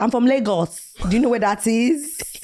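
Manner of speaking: put-on poor Nigerian accent. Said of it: "I put on the worst Nigerian accent".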